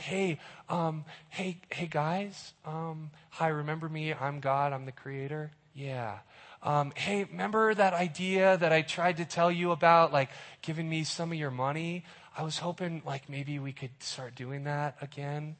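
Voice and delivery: soft, shy, timid voice. Speaker acts out what God does not sound like, timid, shy God voice. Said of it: "God is not timid. God is not shy".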